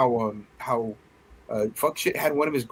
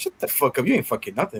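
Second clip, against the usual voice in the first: offhand, nonchalant, swooping, couldn't-care-less dismissive tone. Quoting a film character shutting someone down: nonchalant Ray impression. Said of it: "he says it so, like, nonchalant".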